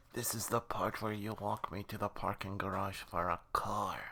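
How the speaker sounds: whispered, in a put-on voice. Voicing a hostage in a game scene, whispering to the captor: whispering in character.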